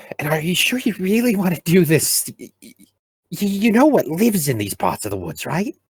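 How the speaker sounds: very high, stammering, stuttering voice. A prisoner the heroes captured questions them as he leads them: stammering prisoner voice. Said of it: "our beloved heroes took a prisoner of war and forced him to take them to their leader".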